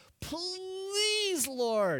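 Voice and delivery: high, swooping, drawn-out whiny pleading voice. Explaining verse 13, the speaker acts out a man's plea to the Lord, imitating a whiny plea. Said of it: "Can you hear the whine in his voice?".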